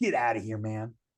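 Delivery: put-on tough-guy voice, hard and dismissive. Retelling a threat from a fired worker's brother: imitating own tough front. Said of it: "I was putting on a front like".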